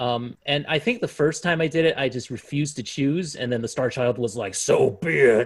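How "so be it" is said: big, loud booming voice. The Star Child answers a player who refused to choose, in a big Reaper voice. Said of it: "in big Reaper voice".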